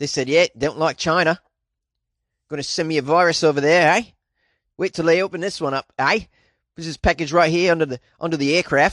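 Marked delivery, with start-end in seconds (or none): 0.6-6.2 clumsily done, fake put-on Australian accent. Voicing a commenter who dislikes China, in a put-on Australian accent. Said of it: "How's this Australian accent?".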